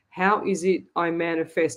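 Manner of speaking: normal talking voice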